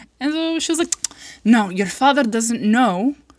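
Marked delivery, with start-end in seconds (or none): 1.4-3.2 put-on Arabic accent. Retelling what the mother said: imitating mom with an accent. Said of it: "I don't know why I'm doing an accent now".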